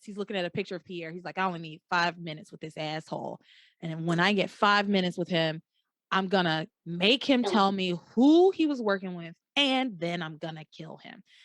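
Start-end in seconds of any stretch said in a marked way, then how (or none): 1.4-11.2 put-on dead-serious, deadly earnest tone. Retelling a scene where a grieving man vows revenge: imitating Luis dead serious. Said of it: "Hank can hear in his voice that, um, Luis ain't playing. Luis is dead serious".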